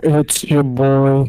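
very loud mumble, close to the mic. Doing an impression of Alex after being asked to: imitating Alex, mumbled close to the mic. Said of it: "do an impression of him".

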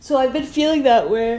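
loud, high speech right through a yawn. Telling how they've been feeling lately, then apologizing for yawning: yawning while talking. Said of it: "I'm so sorry for yawning".

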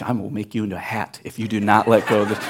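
acted, menacing, threatening whisper. Retelling trying to pull a clinging cat off, retelling a whispered threat. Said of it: "i'm like whispering threats".

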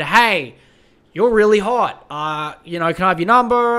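normal talking voice

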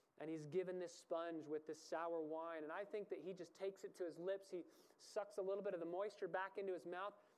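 plain

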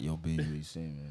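put-on guy voice chatting someone up. Acting out a guy trying it with her: Barry voice. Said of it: "She has to get the Barry voice on".

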